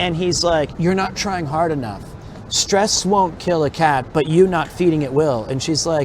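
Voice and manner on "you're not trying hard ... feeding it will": ordinary delivery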